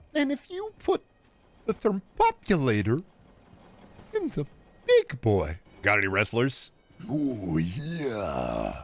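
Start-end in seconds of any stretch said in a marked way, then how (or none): 0.1-5.6 very high, swooping, sing-song put-on voice. Streamer running through voices for chat, doing Emo Phillips impression. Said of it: "Emo Phillips".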